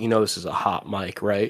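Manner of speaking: quiet, hushed half-whispered aside. Retelling what a friend said on stream: imitating Greg half-whispering. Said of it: "he whispered to me".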